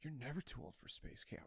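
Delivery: put-on whispered, solemn, grave, earnest, faintly sad. Retelling a line from a movie scene: imitating a serious, slightly sad line. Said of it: "with this most serious face, almost a little sad".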